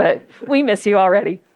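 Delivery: tearful, choked-up voice catching with tears. Saying farewell to a departing leader on behalf of all the staff, in a tearful voice. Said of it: "I'm a crier, so please excuse my voice".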